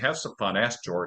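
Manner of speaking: ordinary talk, nothing marked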